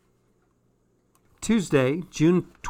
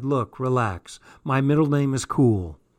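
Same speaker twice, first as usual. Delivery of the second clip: ordinary delivery, nothing marked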